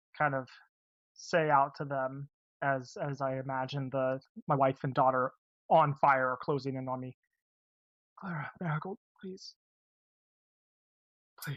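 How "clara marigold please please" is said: very weak, feeble, failing voice, soft and hurried. A character pleads with his wife and daughter as they close in: very weak voice. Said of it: "with a very weak voice".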